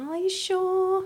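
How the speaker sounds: sugary, faux-innocent, sweet false concern, way up high. Retelling own past words to get someone to offer: imitating a manipulative tone. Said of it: "look at you manipulating".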